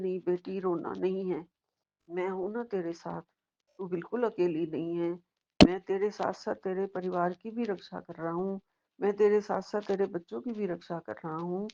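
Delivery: ordinary talk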